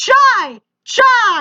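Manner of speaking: play-acted high-pitched yelling over and over. Retelling a boyfriend's dad yelling at the speaker at three a.m., retelling a yell. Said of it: "he's yelling".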